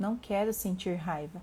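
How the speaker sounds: plain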